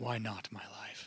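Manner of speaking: hushed, pleading voice.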